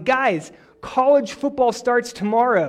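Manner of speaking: high, slow, loud calling-out voice. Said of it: "say loudly".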